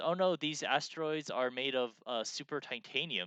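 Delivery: ordinary talk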